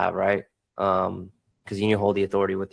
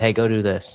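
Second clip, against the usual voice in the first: blunt, direct, curt delivery. Showing how tone changes a direction, first way: blunt direct command. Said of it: "giving a direction in two different tones".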